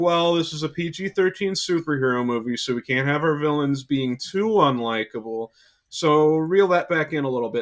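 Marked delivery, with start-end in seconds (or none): none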